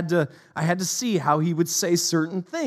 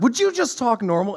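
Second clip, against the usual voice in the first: high, put-on, irritated and angry snap; 5 semitones higher than usual. Speaker retelling what she said before she got mad and left early, mock-angry retort. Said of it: "She got so mad that she left early".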